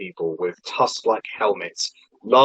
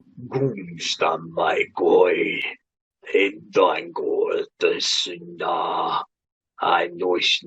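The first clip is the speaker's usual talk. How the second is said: low, deep, booming, echoing voice, much slower; 5 semitones lower, 4 dB quieter than usual. Voicing what he says to you: low, booming, echoing voice. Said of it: "a low, booming voice echoing".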